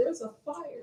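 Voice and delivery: hushed, very quiet whisper. Showing how not to warn people about a burning building: whispering. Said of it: "I'm not gonna go and whisper".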